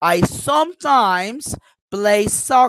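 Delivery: main stress on "sometimes", rest of line lighter. Teaching sentence stress with an example: main stress on sometimes. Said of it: "I stress sometimes".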